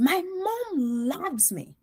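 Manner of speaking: forceful, very high, very slow, drawn-out voice. Retelling a student's reply in class, imitating a forceful insistence. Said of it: "so forcefully".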